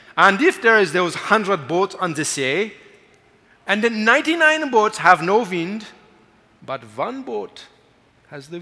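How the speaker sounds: fake German accent, loud and high. Quoting what a man said next: German accent. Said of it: "he says in his German accent".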